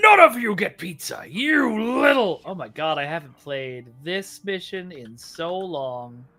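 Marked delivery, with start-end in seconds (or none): 0.0-2.4 loud, pitched-up, put-on vengeful voice. Replaying a game mission and joking with viewers: mock vengeance voice. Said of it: "I can just say it in my vengeance voice".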